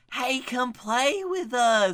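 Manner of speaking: high, slow rural Southern drawl, horror-movie style. Joking about a hotel like a redneck Shining, voicing buck-toothed twins: redneck Shining twins voice. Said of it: "like the redneck Shining".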